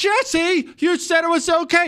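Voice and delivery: put-on very high-pitched, accusing, blaming yell. Telling how she blamed him over the TV show, retelling her yelling at him. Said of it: "she's yelling at me".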